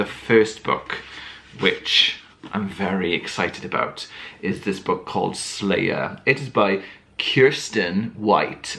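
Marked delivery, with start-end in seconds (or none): 7.2-8.8 light, rough American accent. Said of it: "so I said that in an American accent, kind of".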